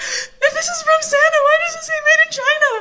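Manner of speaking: put-on very high, tearful, sobbing kid voice. Retelling running to mom as a child, imitating own crying as a kid. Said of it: "I'm crying".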